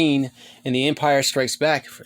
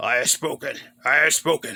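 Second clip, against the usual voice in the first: very raspy voice, rasped out from the throat. Quoting a figure's slogan in a raspy Nick Nolte voice. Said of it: "He has that very raspy, uh, voice".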